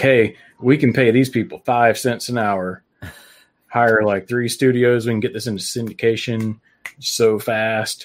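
plain

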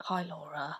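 mocking a posh London accent. Imitating a man from a dating app: imitating a posh Clapham voice. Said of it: "He had a really posh Clapham wanker voice".

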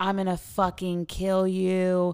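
high-pitched, furious, raging scream. Retelling a couple fighting in the front yard at night, imitating a man screaming. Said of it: "they're like screaming and fighting".

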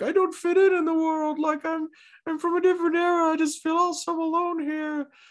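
very high, weepy, sobbing lament. Retelling a character's sudden sad speech in an episode: imitating someone crying. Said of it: "crying and being like".

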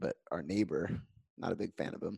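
hushed, quiet, under-the-breath aside. Telling a dream about a neighbor, not wanting him to hear, speaking quietly. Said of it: "I'm going to say this quietly".

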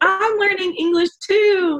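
high, loud, sweet voice.

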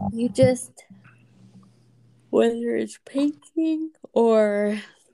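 speaking while yawning. Telling someone they will find happiness, yawning while talking. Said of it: "Are you yawning?".

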